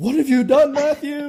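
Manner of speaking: play-acted very high, panicked, freaked-out outburst. Retelling a dad coming down after his son stabbed the drum head: imitating a freaking-out dad. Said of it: "he's, like, freaking out".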